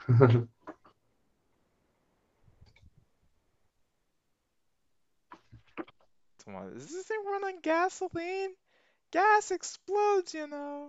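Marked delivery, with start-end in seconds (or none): 6.8-10.9 very high, very loud, swooping put-on voice. Chatting about self-driving cars, one speaker jokes in a high-pitched voice. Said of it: "high pitched voice".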